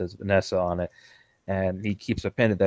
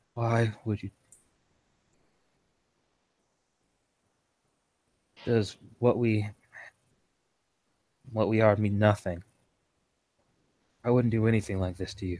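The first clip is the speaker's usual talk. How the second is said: put-on weak, faint, feeble voice; 2 semitones higher than usual. Retelling what a man said on the phone, in a weak voice. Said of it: "he says in a weak voice".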